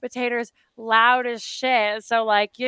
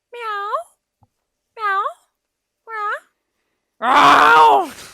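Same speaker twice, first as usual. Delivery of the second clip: high cat meows building to a loud yowl. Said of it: "he's just like".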